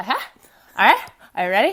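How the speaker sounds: mock valley girl voice. Imitating how friends start a conversation: put-on stereotypical Valley Girl way. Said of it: "stereotypical, like, Valley Girl boy way".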